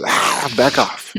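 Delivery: hissing like a lurking vampire. Retelling how the speaker reacts to her, hissing like a vampire. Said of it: "I just hiss at her like a vampire".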